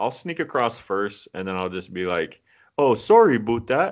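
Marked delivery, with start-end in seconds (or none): 2.8-3.9 put-on Canadian accent, loud and pitched up. Joking about sneaking into Canada to pass as one: put-on Canadian accent. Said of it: "That was a good Canadian accent".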